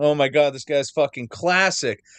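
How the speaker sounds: ordinary talk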